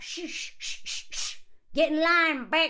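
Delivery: repeated shushing followed by a dismissive, put-down tone. Retelling how women police loudness: imitating women shushing.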